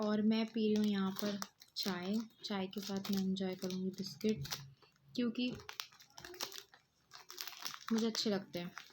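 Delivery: soft, hushed, quiet talking.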